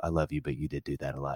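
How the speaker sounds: low, soft, gentle aside. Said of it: "my wife has to turn and go".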